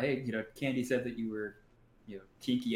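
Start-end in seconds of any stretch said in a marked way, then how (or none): none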